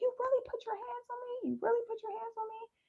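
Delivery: tearful, high-pitched, hysterical sobbing. Retelling confronting a partner who grabbed her: retelling crying hysterically. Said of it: "I'm just crying hysterically".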